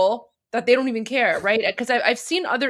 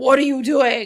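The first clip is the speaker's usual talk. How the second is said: mock disgusted tone, louder; 4 dB louder than usual. Imitating onlookers who stare at someone: imitating disgusted people. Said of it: "disgusted they are".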